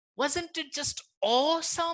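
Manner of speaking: high, slow, disappointed, let-down delivery.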